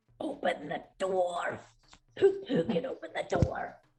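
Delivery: very loud stage whisper. Tabletop player, in character, calls out to the party in a loud whisper. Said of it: "I whisper very loudly".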